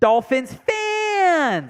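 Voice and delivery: high, very slow, stretched-out announcer call. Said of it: "That's how Will always did it".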